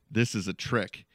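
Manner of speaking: normal talking voice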